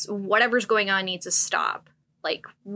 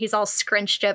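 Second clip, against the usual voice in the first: ordinary talk, nothing marked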